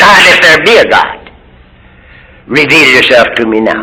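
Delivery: ordinary talk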